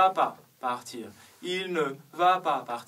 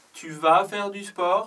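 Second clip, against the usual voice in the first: question-like tune lifting on sport; 4 semitones higher, 4 dB louder than usual. French question without est-ce que: rising intonation at the end. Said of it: "l'intonation monte".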